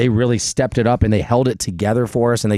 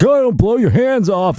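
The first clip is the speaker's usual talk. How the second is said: mock very high, scolding, yelling wife voice; 11 semitones higher, 4 dB louder than usual. Describing dads doing fireworks, imitating a wife yelling. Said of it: "the wife yells at you and is like".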